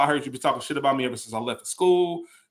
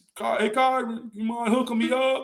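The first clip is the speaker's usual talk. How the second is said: pitched-up, casual, relaxed way of talking; 9 semitones higher than usual. Describing a manager named Walt from work, imitating Walt's way of talking. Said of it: "He used to talk like this".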